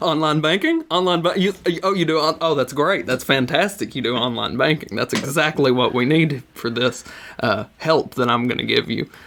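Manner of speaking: overeager delight, fast and excited gushing. Retelling how the scammer reacted to your answer, imitating an excited scammer. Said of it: "you could tell he was so excited".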